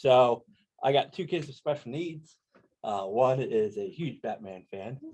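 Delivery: choked up, growing emotional mid-sentence. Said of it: "so I'm gonna get choked up here".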